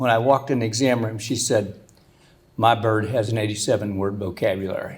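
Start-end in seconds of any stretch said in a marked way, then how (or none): 2.6-5.0 mock low, flat, dead-level monotone. Quoting a woman in the exam room about her bird, flat monotone. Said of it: "Said it just real monotone".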